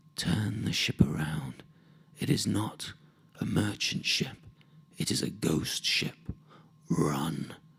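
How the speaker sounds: slow, cold, chilling whisper. Telling a sea story, voicing a kobold's warning: soft, cold voice. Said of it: "I hears that voice again".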